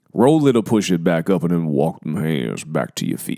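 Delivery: low, just-woke-up morning voice. Leading a workout, cueing hand walkouts in a morning voice. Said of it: "that's my morning voice".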